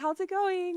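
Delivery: put-on very high, sweet, friendly girly voice. Retelling greeting a man who walks up, in a put-on friendly girly voice.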